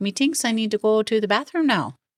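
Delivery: put-on Irish accent. Talking about what they watch together, trying a put-on irish accent. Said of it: "I want to slip into an Irish accent".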